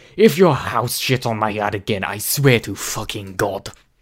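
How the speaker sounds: bad fake Russian accent, loud, yelling. Speaker does a quick bit mid-chat, then apologizes for it: bad Russian accent. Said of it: "my bad Russian accent".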